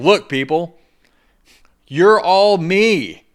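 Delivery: very loud, very slow, high yelling. Retelling yelling into a crowd of people: retelling own yell to a crowd. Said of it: "I remember yelling into the crowd".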